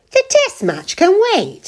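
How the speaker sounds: loud, very high, swooping exclamation. John repeats the other speaker's words back at her; exclaiming loudly. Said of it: "exclaimed John loudly".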